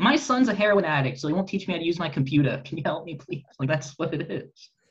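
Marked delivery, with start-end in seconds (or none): 0.0-3.4 imitated Boston accent. Describing a 65-year-old lady in a class, the speaker imitates a Boston accent. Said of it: "You took our accent".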